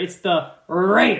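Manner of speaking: slow, drawn-out, emphatic stress on "Raiders". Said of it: "you have to say it like that".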